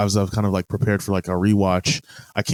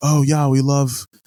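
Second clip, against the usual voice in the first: higher, put-on British accent; 6 semitones higher, 3 dB louder than usual.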